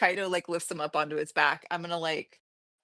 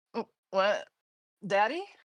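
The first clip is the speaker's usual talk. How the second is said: snorting, groggy, just woken, still half asleep; 3 semitones higher than usual. Playing a character waking from a dream, groggy just-woken snort. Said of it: "snort, be like".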